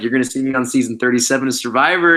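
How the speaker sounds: ordinary delivery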